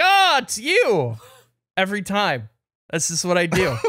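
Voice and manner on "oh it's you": mock way up high, all startled surprise. Retelling answering a call, pretending to be surprised by the caller: mock surprised. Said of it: "I'll be like".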